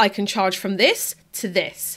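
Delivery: plain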